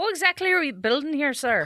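Irish brogue, pitched very high. In a sketch set in 3100 BC England, a worker questions the boss, Irish accent. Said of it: "Why do I have an Irish accent".

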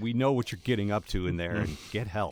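ordinary talk, nothing marked

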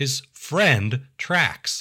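"friend" stretched with a rise, air-quote tone.

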